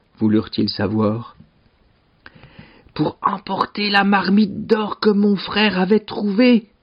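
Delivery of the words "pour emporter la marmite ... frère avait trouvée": hushed whisper, much higher pitch. Narrator reading a character telling others a secret, whispering. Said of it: "chuchota Stéphane".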